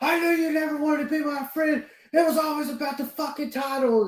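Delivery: very high, shrill screaming rant. Retelling one man screaming at another over a title: retelling a scream. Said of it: "starts screaming at him and saying".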